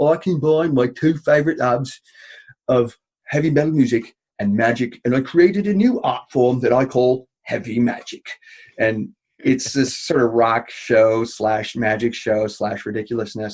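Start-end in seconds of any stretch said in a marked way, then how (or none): 0.0-8.3 put-on faux English accent. Retelling a character coming out on stage, in a faux English accent. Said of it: "he's got that sort of faux English accent".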